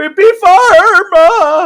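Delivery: very high, cracking yell with drawn-out "pharma". Quoting what he said, the speaker imitates his voice cracking like Grandpa Simpson. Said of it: "his voice actually cracked a little bit".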